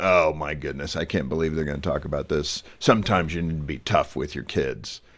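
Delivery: low, doubting, skeptical voice, laid on as caricature. Imitating an imagined dad doubting the book's idea: caricaturing a skeptical dad. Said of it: "I'm caricaturing this as a dad".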